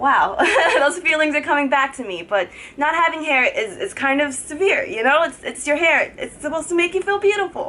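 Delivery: high voice on the verge of tears. Talking on video about losing her hair, on the verge of tears. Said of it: "Can't believe I'm about to cry right now".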